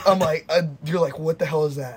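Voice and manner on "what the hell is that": normal talking voice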